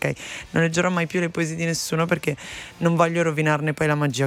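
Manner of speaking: normal talking voice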